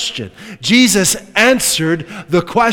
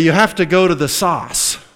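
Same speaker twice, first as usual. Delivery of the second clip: put-on r-less New England accent, source pronounced as sauce. Speaker recalls how a pastor pronounced a word; imitating a pastor's New England accent. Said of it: "when he would say source, he would say".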